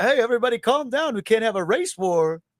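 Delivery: high animated-film cartoon king character voice. Asked to do it again, a speaker redoes the character's line: King Candy voice. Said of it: "King Candy".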